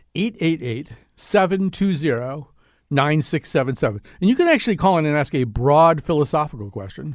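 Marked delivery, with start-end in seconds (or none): 0.2-4.0 slow, deliberate reading, each item said one by one. Repeating the call-in phone number for listeners: saying it more slowly. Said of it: "I'll say this more slowly".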